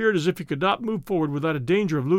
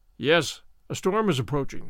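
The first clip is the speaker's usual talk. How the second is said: usual speaking voice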